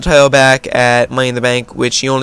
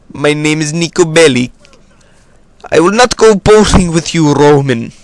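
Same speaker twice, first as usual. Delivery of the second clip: put-on game character Eastern European accent; 3 semitones higher, 4 dB louder than usual. Speaker can't do a British accent, so does Niko Bellic instead: Niko Bellic impression. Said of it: "what I will do instead is Nico Bellic from Grand Theft Auto four".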